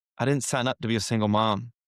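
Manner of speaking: plain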